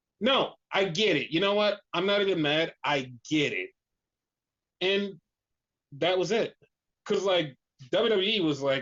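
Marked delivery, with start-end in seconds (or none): none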